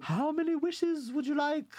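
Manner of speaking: very high, genteel, posh English fairy-godmother voice. Describing how a woman sounds, imitating Faye as fairy godmother. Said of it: "She sounds like what your fairy godmother would sound like".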